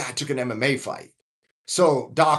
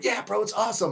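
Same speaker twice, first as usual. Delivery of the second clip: mock upbeat influencer voice, higher and quieter; 6 semitones higher, 5 dB quieter than usual. Retelling what the evening's guests said: imitating a super positive influencer. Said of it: "these super positive, influencer-y".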